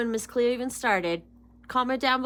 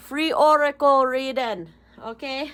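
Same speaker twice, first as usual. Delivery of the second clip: put-on Jamaican accent, loud, slow, drawn out; 6 dB louder than usual. A tarot reader addressing viewers before a reading, Jamaican accent. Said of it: "That's my Jamaican accent".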